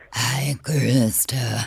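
very low, deep satanic demon voice. Granting a request to say someone's name: satanic voice from House Bunny. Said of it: "will you say my name in the satanic voice".

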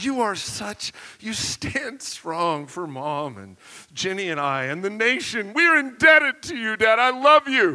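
mock fawning, over-the-top voice. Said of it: "I was pouring it on thick".

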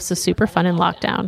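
normal talking voice

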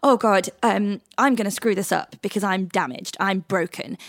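plain

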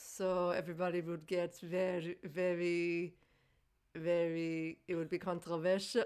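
put-on Israeli-accented speech. Urged to imitate a man's accent while retelling his words, accent drifting into Israeli. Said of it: "Now I'm becoming Israeli".

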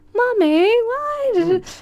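put-on very high, slow, eerily innocent creepy child voice. Describing the children in the court, doing a creepy high-pitched Happiness child voice. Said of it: "quite high-pitched voice that's quite creepy".

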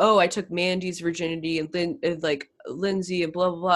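normal talking voice

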